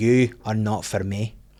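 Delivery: put-on slow, drawn-out Glaswegian accent. Retelling what a woman walking past said to the speaker: Glaswegian accent. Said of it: "goes in a wee Glaswegian accent".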